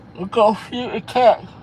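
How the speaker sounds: very high, loud words stretched by a yawn. Chatting with someone, the speaker starts yawning: yawning while talking. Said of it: "I got started yawning early".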